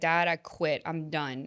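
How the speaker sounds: put-on bawling, slow and tearful sobbing. Retelling telling dad after a hard game: imitating own past crying. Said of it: "I get in the car and I'm bawling".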